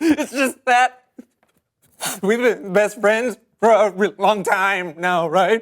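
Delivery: weepy, tearful speech through crying. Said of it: "Why do you keep crying when I say best friend?".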